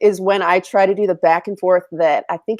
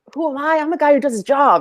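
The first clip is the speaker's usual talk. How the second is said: bad, rough, put-on Boston accent, pitched up; 8 semitones higher than usual. Trying a line from The Departed, admitting the accent is bad: bad Boston accent. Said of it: "I wish I could do a better Boston accent".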